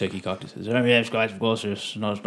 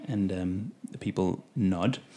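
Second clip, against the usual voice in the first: usual speaking voice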